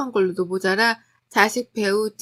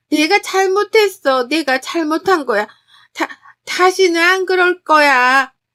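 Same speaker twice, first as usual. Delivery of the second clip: loud sobbing voice. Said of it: "더욱 크게 우시며 대답하시더라고요".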